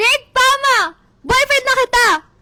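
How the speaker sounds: loud, high-pitched shout.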